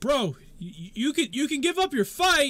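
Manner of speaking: very high, very loud, rising yell. Voicing a character calling out to a beaten-up fighter: yelling out. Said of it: "hear [name] yell out".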